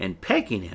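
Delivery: plain reading voice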